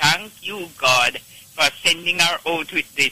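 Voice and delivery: normal talking voice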